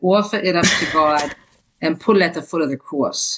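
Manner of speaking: put-on New Jersey accent. Quoting a saying first heard as a child, in their mother's New Jersey accent. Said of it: "I'll say it in my mother's Jersey accent".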